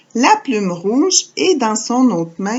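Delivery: ordinary delivery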